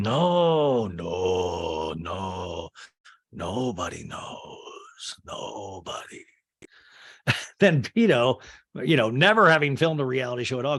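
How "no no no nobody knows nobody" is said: very low, very slow put-on bass, "no" drawn out. Acting out a man's answer to whether she knows, imitating his deep voice.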